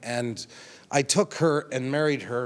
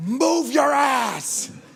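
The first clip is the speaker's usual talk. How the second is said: mock, very high, loud shrieking; 13 semitones higher, 5 dB louder than usual. Retelling getting a ninety-six-year-old man up, the speaker re-enacts a scream. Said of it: "And I screamed at him".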